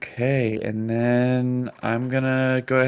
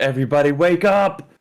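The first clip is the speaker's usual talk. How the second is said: full-throated, loud, top-of-the-lungs yell; 3 semitones higher, 6 dB louder than usual. Voicing a character waking everyone: shouting at top of lungs. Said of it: "gonna shout at the top of his lungs".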